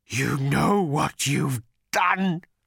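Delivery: pained, gurgling voice. Narrating Agrajag turning on Arthur at the altar, Agrajag gurgling painfully. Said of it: "he gurgled painfully".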